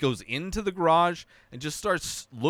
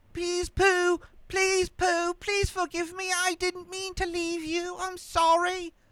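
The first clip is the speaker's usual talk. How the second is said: put-on very high-pitched little-baby voice, pleading and begging; 14 semitones higher than usual. Mocking a character who begs for forgiveness, like a little baby begging. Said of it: "like a little baby asking for forgiveness".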